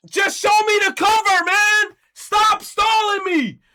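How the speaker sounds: shrill, furious, very loud, high, full-volume yelling. Venting about videos that stall before the reveal, angry yelling. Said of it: "I'm yelling".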